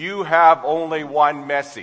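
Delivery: robotic, flat monotone answering-machine voice. In a sermon, retelling how an answering machine reset: monotone answering-machine voice. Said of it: "that monotone voice came out".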